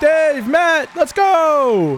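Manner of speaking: hyped cheer with voice crack, drawn-out "go". Cheering as two presenters are brought out, voice cracking. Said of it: "Voice crack".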